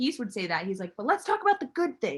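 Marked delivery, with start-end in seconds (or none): 1.0-2.2 mock heated, irritated, angry, pitched-up voice. Retelling what he would say in the middle of a fight, imitating an angry voice. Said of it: "like with an angry voice".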